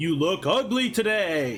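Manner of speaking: goofy, silly, low enchanted magic-mirror voice. Explaining the mirror prank to Father, showing the silly magic mirror voice. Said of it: "in a silly magic mirror voice".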